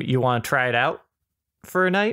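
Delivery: ordinary delivery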